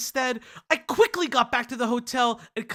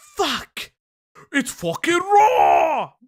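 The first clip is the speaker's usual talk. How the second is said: put-on raised voice, poor British accent; 3 semitones higher, 8 dB louder than usual. Picturing the chef judging his burger, in a bad Gordon Ramsay accent. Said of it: "I can't do a really good British accent".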